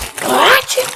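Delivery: imitated loud yell, pitched way up, kept mild. Reminding the other speaker how he once yelled: imitating a loud yell. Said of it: "But really loud?".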